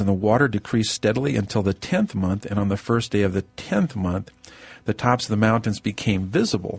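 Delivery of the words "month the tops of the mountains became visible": normal talking voice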